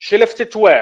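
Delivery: pitch climbs upward on the word "where". Teaching question intonation, asking where something was left: rising intonation on where. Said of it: "rising with where".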